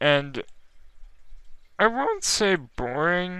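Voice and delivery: voice breaks mid-word, cracking on boring. Introducing today's pick to an audience: voice crack on boring. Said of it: "That was a voice crack".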